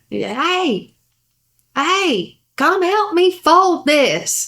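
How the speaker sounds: high calling out, long stretched hey. Retelling a woman calling a man over to help with laundry: imitating her hollering. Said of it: "she starts hollering at him".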